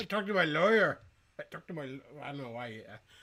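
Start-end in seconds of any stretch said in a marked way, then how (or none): 0.0-1.8 put-on, imitated Mexican accent. Imitating a filipino man answering questions about charges, in a put-on mexican accent. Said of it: "giving the Filipino guy the Mexican accent".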